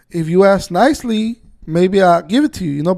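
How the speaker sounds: loud, biting, sarcastic retort. Retelling own reply to a man on the phone: imitating own sarcastic reply. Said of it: "But I was being sarcastic".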